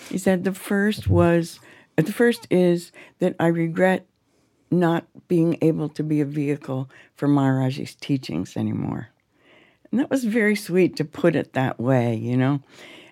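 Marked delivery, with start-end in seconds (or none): 0.4-8.6 really slow delivery with frequent pauses. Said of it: "I talk in that really slow voice".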